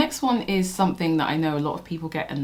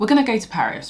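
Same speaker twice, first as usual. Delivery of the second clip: bad put-on American accent, higher and louder; 5 semitones higher, 5 dB louder than usual. Mocking how american shows talk about places, terrible american accent. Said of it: "This is a terrible accent".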